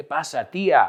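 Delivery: ordinary talk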